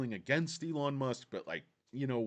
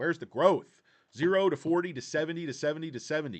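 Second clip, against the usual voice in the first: ordinary talk, nothing marked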